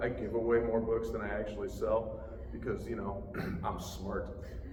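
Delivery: sarcastic tone.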